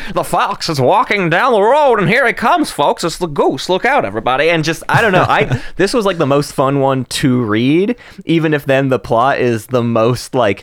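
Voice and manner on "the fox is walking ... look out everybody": put-on old-time 1930s radio broadcaster voice. Recalling reading a story aloud, in a classic old 1930s radio broadcaster voice. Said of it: "like the classic old 1930s radio broadcaster".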